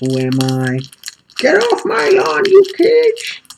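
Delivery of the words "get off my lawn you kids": put-on very high, very loud, cranky crazy old man voice. While opening magic cards, the speaker puts on an old crazy man voice. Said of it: "I'm just an old crazy man".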